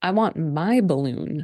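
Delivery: deadpan, creepy put-on child voice. Retelling a child demanding his balloon back: imitating a deadpan creepy kid. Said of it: "very deadpan and creepy".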